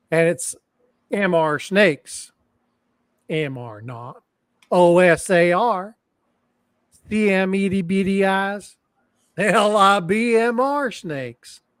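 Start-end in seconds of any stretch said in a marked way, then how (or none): 1.1-11.6 Southern American accent. Reading old gibberish aloud the only way it makes sense: Southern accent. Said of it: "you got to do it with the Southern accent".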